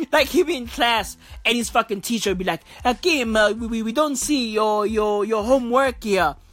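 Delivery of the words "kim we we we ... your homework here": put-on Italian accent, pitched lower. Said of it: "they all sound Italian".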